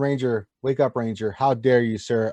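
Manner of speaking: ordinary talk, nothing marked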